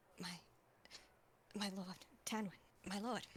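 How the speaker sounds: stammering, stuttering, tripping over the words. A character stumbles to his feet, stands at attention and addresses his lord, stammering.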